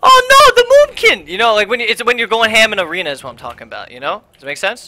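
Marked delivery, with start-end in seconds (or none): 0.0-1.3 squeaky, super high-pitched put-on voice. Imitating how the listener sounds when going ham in arena: super high-pitched voice. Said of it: "super high-pitched voice where you're just like".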